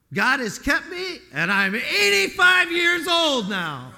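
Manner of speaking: triumphant proclamation, high and loud shout.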